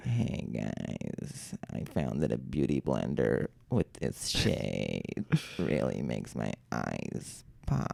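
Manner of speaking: slow, hushed, creaky vocal fry, almost a whisper. Prompted by a co-host to talk in vocal fry, the speaker tries it: vocal fry. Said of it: "I'm trying vocal fry out for a bit".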